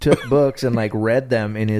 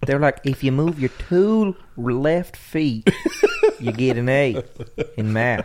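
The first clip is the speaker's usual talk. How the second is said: put-on rural drawl with swooping pitch; 4 semitones higher than usual. A speaker who was homeschooled mimics the voice of homeschooling, hick voice. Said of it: "A hick voice".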